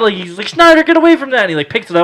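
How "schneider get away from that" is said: frantic, shrill, very high, very loud panicked yell. Retelling how a cousin reacted to the dog: imitating someone freaking out. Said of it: "my cousin starts freaking out".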